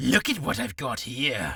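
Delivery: forced put-on English accent, pushed on hard. Speaker showing how they first tried the line, in an english accent. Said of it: "I added an English accent".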